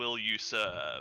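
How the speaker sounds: inhumanly deep otherworldly voice. Voicing a transformed figure offering a hand: inhumanly deep otherworldly voice. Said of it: "inhumanly, like, sorta, like, deep voice here".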